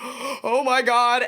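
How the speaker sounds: put-on frantic, overexcited outburst, coming a little unglued. Retelling opening a last gift, imitating losing one's mind. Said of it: "lose my mind a little bit".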